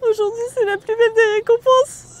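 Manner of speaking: tearful, high, breaking voice. Receiving a reward, the speaker talks through tears, crying while speaking. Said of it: "j'arrête de pleurer".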